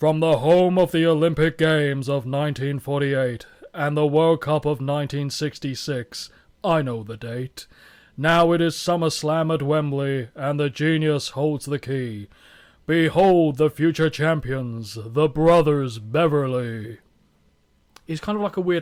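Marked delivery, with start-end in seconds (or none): 0.0-17.0 booming, slow, deliberately clumsy loud delivery. Reading a wrestler's poem aloud while attempting his voice: bad Lanny Poffo impression. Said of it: "I can try, but it won't go well".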